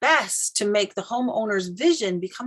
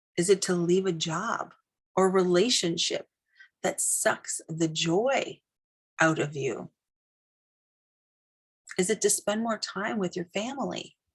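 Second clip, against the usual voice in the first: lowered voice, brought down, talking underneath; 2 semitones lower, 3 dB quieter than usual. Talking behind listeners while they write their business vision, lowered voice. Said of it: "I'm going to kind of lower my voice".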